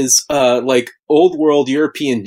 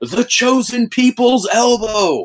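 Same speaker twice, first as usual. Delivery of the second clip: mock all-out yell from the lungs, high, drawn-out; 9 semitones higher than usual. Retelling a wrestler's call during a match: imitating someone yelling at full volume. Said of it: "yells out at the top of his lungs".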